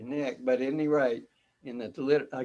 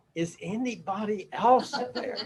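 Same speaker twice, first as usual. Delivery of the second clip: fake scream, much higher in pitch; 8 semitones higher than usual. Telling a joke, the man hanging off a cliff answers: retelling a scream. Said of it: "And then this scream".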